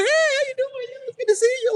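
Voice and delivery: very high, syrupy, overly sweet fake-friendly tone. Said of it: "still nice enough to smile in your face".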